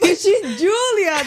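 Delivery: whining through laughter.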